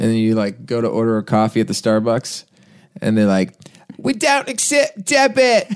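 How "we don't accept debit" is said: very high, slow, put-on Australian accent. Quoting Starbucks staff in Whistler, in an imitated Australian accent. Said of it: "that was my Australian accent".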